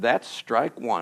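very quiet, hushed, under the breath. Retelling a joke story, quoting your grandma: imitating a quiet voice. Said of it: "with a quiet voice and said".

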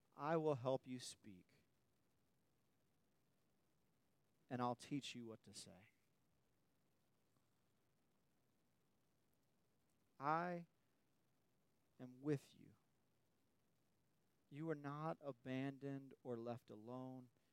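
hushed, intimate, very quiet, soft, low and tender. Speaker recounts hearing from the Lord, acting out a tender, intimate voice. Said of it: "in a more tender and intimate voice".

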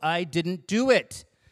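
fed-up, put-upon annoyance, very slow. Dad quoting "i didn't do it", imitating his annoyance. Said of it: "He's got this real, like, annoyance in his voice".

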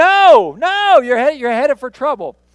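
high, very loud screaming voice. Retelling a flagman stopping a wrong-way driver: imitating a screaming flagman. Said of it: "he's screaming".

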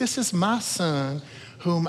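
put-on slow, drawn-out Southern accent. Retelling the voice from heaven in the story, as Southern-accented Jesus voice. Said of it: "I think Jesus sounds Southern".

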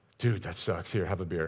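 put-on emotionless deadpan, low and flat. Retelling fraternity brothers' reply to a breakup: imitating an emotionless twenty-one-year-old guy. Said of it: "with all the, the emotion that a twenty-one-year-old guy can muster".

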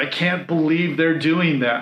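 plain

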